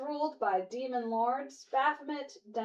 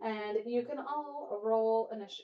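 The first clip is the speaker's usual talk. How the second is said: ordinary talk, nothing marked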